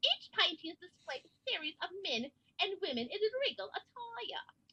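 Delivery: angry put-on British accent. Reading a story passage aloud to try an accent, in an angry British accent. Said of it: "I'm going to try an angry British accent".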